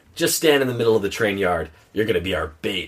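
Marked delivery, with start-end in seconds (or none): none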